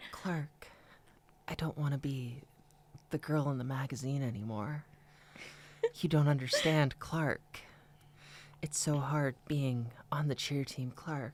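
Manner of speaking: put-on childlike, pleading baby-voice half-whisper. Recapping the show, the speaker imitates Lana Lang talking to Clark: Lana Lang baby-voice half-whisper. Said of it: "baby voice whisper talk".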